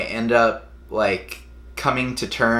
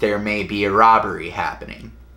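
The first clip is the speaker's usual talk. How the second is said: ordinary talk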